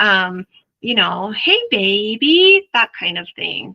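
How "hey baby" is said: high, slow, loud, stretched-out parentese. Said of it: "do it in an interesting voice".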